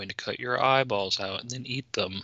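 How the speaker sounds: fake soothing, reassuring tone with a menacing edge. Describing how a character talks, imitate his fake soothing voice. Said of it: "fake soothing voice where he's talking like this".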